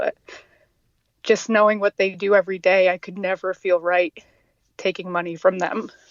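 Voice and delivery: halting, emotional voice, catching and breaking. Speaker explains why they won't take money from animal rescuers, getting emotional. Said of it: "I'm getting emotional".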